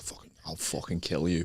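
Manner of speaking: seething, furious whisper. Retelling squaring up to a rival fan: retelling an angry threat. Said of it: "I've never been so angry".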